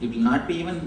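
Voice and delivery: plain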